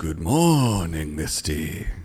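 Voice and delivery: eerie, ghoulish, fake spooky voice. Greeting a co-host on Halloween week: put-on spooky Halloween voice. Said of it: "that was my spooky Halloween week voice".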